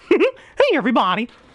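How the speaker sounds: bouncy cartoon voice, pitched way up. Explaining how to do Mickey Mouse's voice, then trying it: high bouncy Mickey Mouse voice. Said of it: "a little higher and a little higher and smile and aw".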